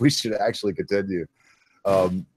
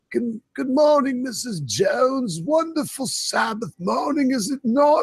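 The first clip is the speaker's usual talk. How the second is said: put-on very high, slow, drawn-out old deacon voice. Imitating a deacon greeting people at the church door: old man deacon voice. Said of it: "are you being inspired by Locke here to do your voices".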